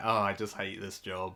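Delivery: mock-bored delivery. Reviewing a cartoon, imitating how the voice actor sounds: bored. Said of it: "dude just sounds so bored".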